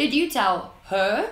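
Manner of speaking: rising, question-like tune on her. Explaining the upwards tone used in questions: rising tone on her. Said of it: "The upwards tone is typically used in a question where you say".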